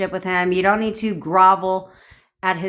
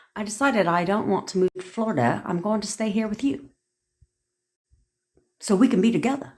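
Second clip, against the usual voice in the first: put-on British accent, trying hard; 2 semitones higher, 4 dB quieter than usual. Acting out a partner's imagined words: attempted uk accent. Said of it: "How is that for a U K accent?".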